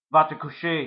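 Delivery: very loud, commanding voice. The narrator's father, stopping the chase, commands the narrator. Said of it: "my father commanded".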